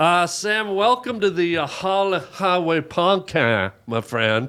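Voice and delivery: joking put-on Cajun accent. Welcoming Sam to the Highway Podcast: put-on Cajun voice.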